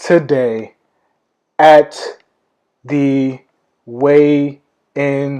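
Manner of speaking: slow, drawn-out, word-by-word announcement with long pauses. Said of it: "why am I saying it like that?".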